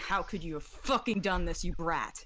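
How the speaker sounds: terrifying, scary voice. Projecting a mother's voice to scare a character: terrifying mother's voice. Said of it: "project her mother's voice saying".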